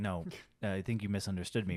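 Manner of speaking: put-on deadpan sitcom boss voice. Joking about asking a waiter for limes, channeling Ron Swanson. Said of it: "channel my inner, uh, Ron Swanson".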